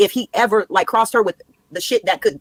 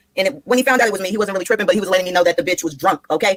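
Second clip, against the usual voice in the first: plain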